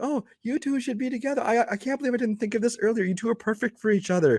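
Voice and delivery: weird, overdone theatrical gushing delivery, pitched high. Retelling how the therapist brings her in: imitating someone over the top. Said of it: "she's acting really weird and over the top".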